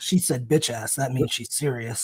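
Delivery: grave, serious, low, quiet commentary tone. Retelling what JR said during a match: JR's low tone. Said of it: "J R goes in a low tone".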